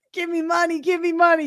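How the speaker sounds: high, begging voice. Comparing self to a beggar on the side of the road: imitating a roadside beggar. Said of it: "that guy on the side of the road that's like".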